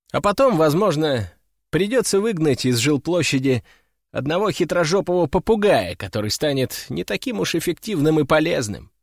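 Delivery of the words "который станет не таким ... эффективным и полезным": ordinary delivery, nothing marked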